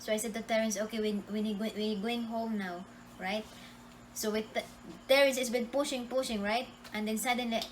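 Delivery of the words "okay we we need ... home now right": plain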